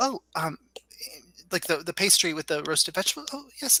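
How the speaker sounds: nervous little guy voice. In an improvised scene, ordering food: nervous little guy voice. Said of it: "he's got a little nervous guy".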